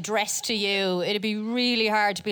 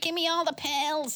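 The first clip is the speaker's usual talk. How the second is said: high, buzzing dog voice with an odd accent; 6 semitones higher than usual. Imagining a dog on drugs, the speaker voices it: dog voice with an accent. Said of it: "I don't know why he has that accent".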